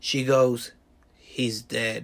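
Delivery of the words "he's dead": acted, low, grave, mournful, somber delivery. Retelling her answer to a snarky question, imitating a low, somber voice. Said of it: "with a low and somber voice".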